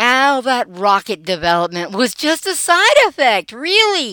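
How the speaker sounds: sarcastic tone. Narrating Cold War history, the speaker makes a sarcastic aside. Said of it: "yes, that's sarcasm".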